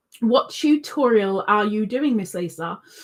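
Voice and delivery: ordinary talk, nothing marked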